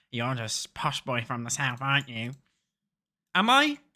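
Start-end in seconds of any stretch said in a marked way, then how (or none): 0.1-2.3 mock hostile, taunting, aggressive accusing jab. Retelling what Northern people say to them: imitating someone aggressive. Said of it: "They always get so aggressive with me".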